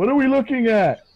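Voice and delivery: high, loud, bellowed. [name] bellows out a question as Middleton points toward the cave. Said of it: "And [name] bellows out".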